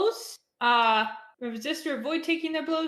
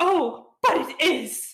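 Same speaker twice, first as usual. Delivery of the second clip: very fancy, raised, loud, terribly posh voice; 4 semitones higher, 6 dB louder than usual. Narrating a scene for the players, voicing Mantis, in a very fancy voice. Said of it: "Says this a very, very fancy ass voice".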